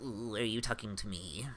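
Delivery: soft, whiny, whining, chittering creature voice. Voicing a creature heard in the listener's mind, whining, chittering creature voice. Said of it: "a sort of whining, chittering voice".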